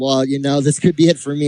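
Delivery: ordinary delivery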